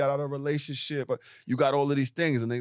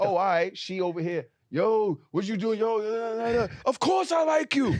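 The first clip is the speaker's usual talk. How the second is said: mock raised man's voice, pitched higher; 8 semitones higher than usual. Acting out a man reacting once she moves on: imitating a man raising his voice. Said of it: "now you raising your voice".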